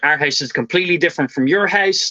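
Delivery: ordinary delivery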